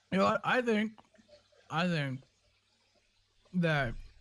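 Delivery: talking with mouth full. Guessing an answer while chewing peanuts: talking with mouth full of peanuts. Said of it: "I got peanuts, which just stuck in my mouth".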